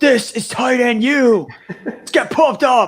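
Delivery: put-on very high, shrill, drawn-out screaming. Retelling tight ends screaming into a microphone: imitating George Kittle and Travis Kelce screaming. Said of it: "screaming at each other or into, like, the microphone".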